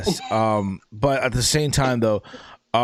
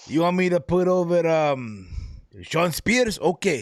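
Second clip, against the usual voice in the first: very bad fake Japanese accent, pitched up; 7 semitones higher than usual. Joking about wrestling bookings, in a bad Japanese accent. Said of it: "worst Japanese accent".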